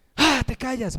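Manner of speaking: light, high, mild yelling, acted out. Acting out yelling at home: imitating someone shouting at home. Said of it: "Gritos en casa".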